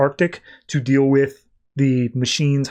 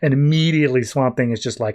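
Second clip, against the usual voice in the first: ordinary delivery, nothing marked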